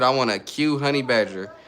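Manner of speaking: ordinary talk, nothing marked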